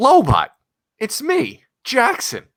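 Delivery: very high, loud, eager, bouncing with excitement. Redoing a line reading after being asked to make it very enthusiastic. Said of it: "it was very enthusiastic".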